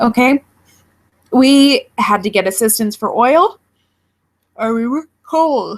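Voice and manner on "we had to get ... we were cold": talking through yawns, much slower. Telling about needing help for heating oil growing up, yawning while talking. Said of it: "I keep yawning".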